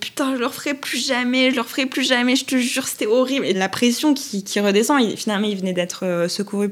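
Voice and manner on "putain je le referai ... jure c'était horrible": put-on tearful, breaking-down sobs, high crying voice. Speaker retelling a phone call, imitating Julien crying. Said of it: "Il se met à pleurer".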